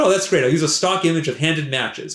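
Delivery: ordinary delivery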